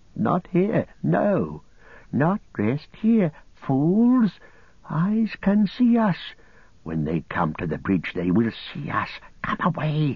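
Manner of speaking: high, swooping, fearful hiss. Narrator voicing Gollum, hissing behind his hand as if hiding from listeners. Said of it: "hissing behind his hand".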